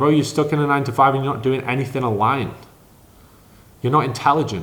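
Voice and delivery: ordinary talk, nothing marked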